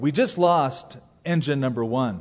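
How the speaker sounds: ordinary talk, nothing marked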